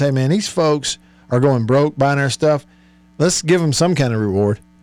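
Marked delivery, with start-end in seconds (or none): none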